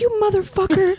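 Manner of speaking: mock shrill, very high-pitched yelling. Retelling her dad yelling at Steve on the field: retelling dad's yell. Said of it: "And so then he starts yelling".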